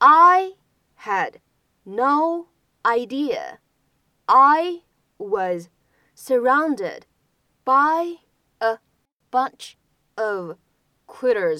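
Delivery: slow, word-by-word delivery with pauses between words.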